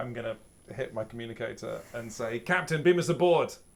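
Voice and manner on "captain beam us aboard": full-throated, high, loud screaming. A player's character calls the captain over the communicator, screaming. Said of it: "you were busy screaming into your comm badge".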